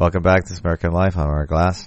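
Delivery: low, fast, mumbling radio-host voice. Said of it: "He mumbles".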